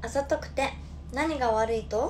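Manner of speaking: Hakata dialect, very slow and drawn out. Performing a line in a Hakata dialect version: Hakata dialect. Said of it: "博多弁バージョンで行かせていただきます。".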